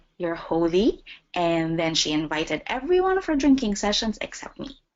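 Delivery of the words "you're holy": mock-sarcastic tone. Quoting a woman who had just made the sign of the cross over her, sarcastically. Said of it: "In a sarcastic tone".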